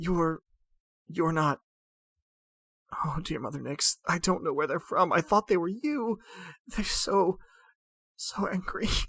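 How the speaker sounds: put-on sobbing, broken voice. Game master voicing a woman pleading with the players, weeping in character. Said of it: "she literally begins to weep".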